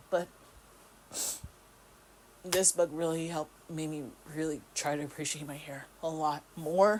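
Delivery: touched, moved, getting emotional. Speaker reviewing a book they loved, getting emotional. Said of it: "I'm getting emotional".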